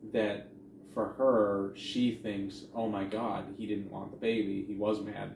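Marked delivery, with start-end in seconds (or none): none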